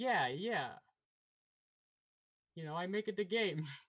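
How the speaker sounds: put-on Italian accent, high pitch. Tony Bagels answers another character's question, in a bad Italian accent. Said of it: "Tony Bagels speaks in a bad Italian accent".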